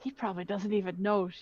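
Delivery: half-whispered remark. During a role-play scene, a character half-whispers toward Zarg: half-whispered aside. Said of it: "She kind of whispers towards Zarg".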